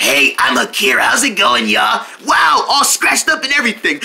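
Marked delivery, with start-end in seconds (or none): 0.0-2.0 very low, deep character voice. Asked by another friend for their voice: Akira impression. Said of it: "what about me?".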